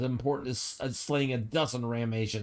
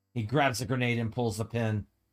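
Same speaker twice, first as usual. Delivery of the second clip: normal talking voice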